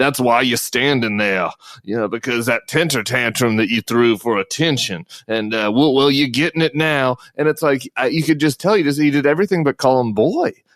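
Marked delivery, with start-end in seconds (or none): 0.0-7.2 put-on mocking, sinister Southern drawl. Imitating a state representative mocking a colleague: mocking Southern accent.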